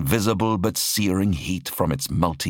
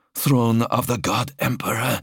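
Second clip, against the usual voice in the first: whispered, slower; 4 semitones higher than usual. A captive speaking for the first time since his capture, whispered. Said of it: "he whispered".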